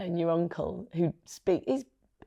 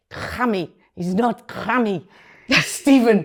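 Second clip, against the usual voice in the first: loud, slow put-on Geordie German accent; 4 semitones higher, 7 dB louder than usual. Imitating his mother correcting people about his name: geordie german accent. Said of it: "So she had this Geordie German".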